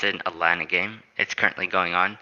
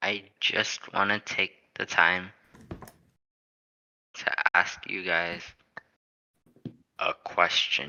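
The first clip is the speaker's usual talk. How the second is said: slow, drawn-out, breathy, hushed whisper; 5 dB quieter than usual. Talking basketball, a speaker turns to the group to ask a question, speaking slowly. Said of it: "Why are you speaking so slow".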